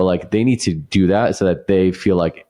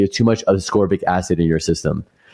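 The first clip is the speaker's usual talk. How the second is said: plain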